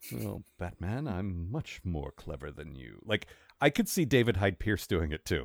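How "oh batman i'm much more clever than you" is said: very quiet, low, slow, smug know-it-all tone. While discussing casting, one speaker plays the villain taunting Batman, smug smart-guy Riddler voice. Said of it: "he's got that smug, smart guy voice".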